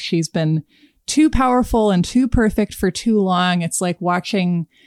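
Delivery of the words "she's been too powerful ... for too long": ordinary talk, nothing marked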